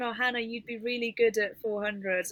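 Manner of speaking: plain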